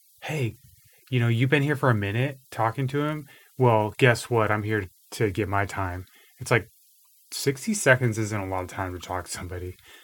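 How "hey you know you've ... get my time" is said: ordinary delivery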